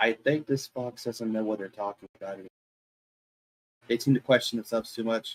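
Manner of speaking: leaning-in, private half-whispered aside. Playing a character leaning over to half-whisper to Brad: half-whispering to another character. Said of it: "leans over to Brad to whisper".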